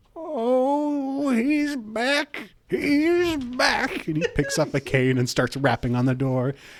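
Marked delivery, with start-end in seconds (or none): 0.2-4.1 put-on thrilled little old man voice, very high, very slow. Narrator voices an old man as he sees Alward walking up, excited. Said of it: "he just starts looking really excited".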